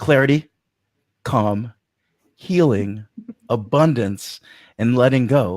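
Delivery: very slow, unhurried, each word carefully spaced and drawn out. Repeating a list of calming words to listeners, deliberately taking it real slow, very slow. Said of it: "So I'm going to go real slow".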